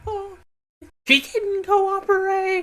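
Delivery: voice cracking, flipping very high, slow and drawn-out. Imitating Reese getting mad, his voice breaking. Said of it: "his voice breaks".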